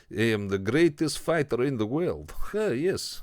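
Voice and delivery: loud, cheesy, badly done Russian accent. Describing a movie's convict champion, doing a bad Yuri Boyka Russian accent. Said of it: "is a bit of a shit Russian accent".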